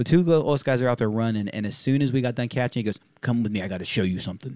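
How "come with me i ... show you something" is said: put-on serious tone, lower and quieter. Retelling what he said after catching a tandem: imitating a serious tone. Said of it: "you know how serious he sounds?".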